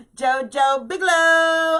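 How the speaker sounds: very high, very loud, thrilled, excited shout. On her live stream, she calls out a name, excited. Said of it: "I'm not yelling. I'm just excited".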